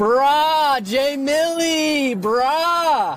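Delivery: goofy, very slow, drawn-out put-on exasperation on "bruh". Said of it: "he's just being stupid".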